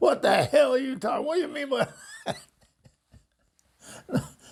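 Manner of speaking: mock very high-pitched, shrill angry outburst. Retelling how a tough guy went off on a friend: imitating an angry outburst. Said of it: "He went off on my poor friend".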